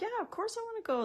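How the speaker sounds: eager, high, fast delivery.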